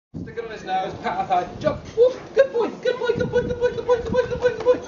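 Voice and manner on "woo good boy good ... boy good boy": very high-pitched, excited, praising voice. Training a dog to jump, the trainer praises him in a high-pitched voice. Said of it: "I'm using a high-pitched voice".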